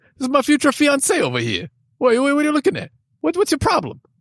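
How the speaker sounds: very high, showy, swooping put-on New Jersey accent. Showing how people in jersey talked, put-on jersey accent. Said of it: "Is that a pretty good accent?".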